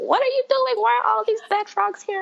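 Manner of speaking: put-on very high, yelling grandma voice. Retelling a childhood scene where grandma yelled about dead frogs: imitating grandma yelling. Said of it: "My grandma would be yelling at me".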